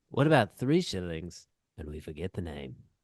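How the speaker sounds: very low, dropped-pitch put-on pirate voice. Doing a line from the pirate movie: Jack Sparrow voice. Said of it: "your impressions are dead on".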